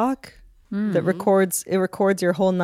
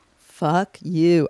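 put-on angry sleep-talk outburst. Retelling what gets said in sleep: imitating angry sleep-talk. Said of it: "I am angry".

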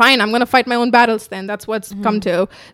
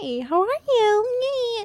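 very high, soft, fake-polite customer-service voice; 11 semitones higher, 7 dB quieter than usual. Retelling how a woman greeted her at uni, imitating fake customer service voice. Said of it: "We all have that fake customer voice".

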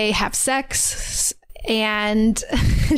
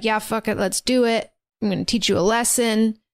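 put-on annoyed tone. Retelling the big guy accepting the challenge: imitating an annoyed reply. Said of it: "annoyed by him and is like".

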